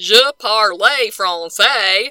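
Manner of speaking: French spoken with an American Southern accent. Showing how badly one speaks french: french spoken with a southern accent. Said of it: "it's with a Southern accent".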